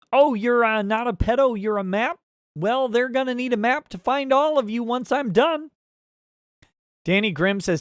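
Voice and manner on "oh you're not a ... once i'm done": high-pitched frog puppet voice. Reading a viewer's message aloud as asked: Kermit voice. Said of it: "in Kermit voice".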